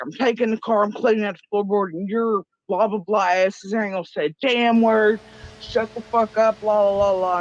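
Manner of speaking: furious, high-pitched screaming rant. Retelling what he did about the earring: imitating someone screaming. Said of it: "he was screaming".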